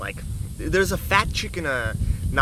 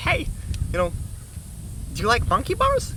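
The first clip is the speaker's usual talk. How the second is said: tiny, small, high sing-song voice; 8 semitones higher than usual. Retelling someone at the gym calling to him during muscle ups, little voice. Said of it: "say with this little voice".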